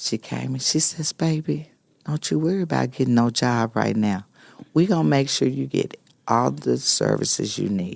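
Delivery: softly spoken, gentle voice. Retelling what a woman said to the speaker, who feared homelessness, soft voice. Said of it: "with that soft voice".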